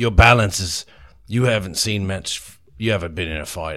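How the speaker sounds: ordinary delivery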